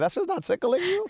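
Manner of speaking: mock disbelief, pitched high.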